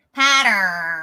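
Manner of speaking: accent from America. Repeating a word the others misheard, in an American accent. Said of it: "I'll say it like an American me".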